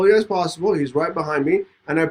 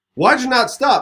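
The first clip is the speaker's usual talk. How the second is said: put-on cop voice, high, sharp, barked yelling; 7 semitones higher than usual. Retelling a police stop, imitating an officer yelling. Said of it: "he's yelling at me like".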